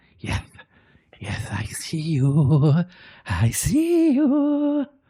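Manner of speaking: whisper with a heavy lisp. Narrating a story, voicing an unseen masculine voice whispering in a listener's ear, heavy lisping whisper. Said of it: "a whisper, but it has this really heavy lisp".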